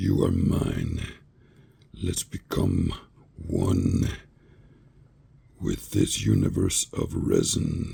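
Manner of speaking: horrible, very deep, very low, slow, creepy horror growl. Voicing resin settling into a piece, creepy voice. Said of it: "How's that for a creepy voice".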